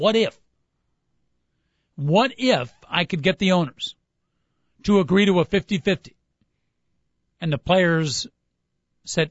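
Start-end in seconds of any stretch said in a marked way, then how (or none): none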